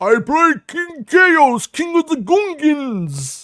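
very high, very slow, loud booming voice, words drawn out. Retelling an actor's interview answer: imitating Brian Blessed. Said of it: "And he's all".

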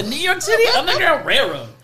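exaggerated put-on voice. Joking in a group conversation, a speaker slips into a put-on voice. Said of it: "I shouldn't be doing that voice".

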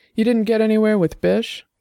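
voice firming up a little. Annabel questions Dex, her voice hardening a little. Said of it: "her voice hardening a little".

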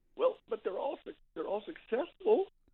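small, wounded, timid voice. Recounting answering a man who said they do too many things, retelling a hurt, meek reply. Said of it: "kind of hurt, meek".

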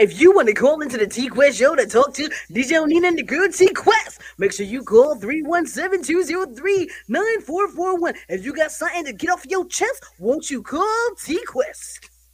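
booming, loud tv ad pitchman infomercial announcer voice. Recording a promo for the call-in show: infomercial announcer voice.

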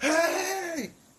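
high-pitched yell. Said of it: "I'm yelling".

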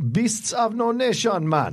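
put-on Jamaican accent, very high, very drawn out. Repeating a movie title as a joke: put-on Jamaican accent. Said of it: "that's the wrong accent".

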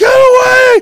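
high, loud, frantic scream.

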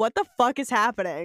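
ordinary delivery

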